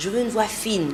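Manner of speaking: normal talking voice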